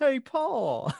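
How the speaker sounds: very high, loud, put-on Southern drawl. Showing what the actors' iconic Southern accents sound like: imitating a Southern US accent. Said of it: "those very iconic Southern accents".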